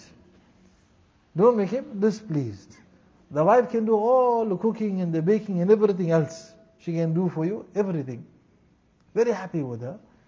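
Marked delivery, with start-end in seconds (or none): 1.3-2.8 slow, emphatic, weighty delivery.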